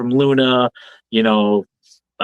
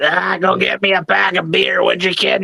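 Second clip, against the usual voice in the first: rough, raspy, high smoker's croak; 8 semitones higher than usual. A podcast host does a bit in a crazy aunt smoker's-cough voice. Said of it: "The crazy aunt with the smoker cough voice".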